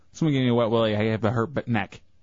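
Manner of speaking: ordinary talk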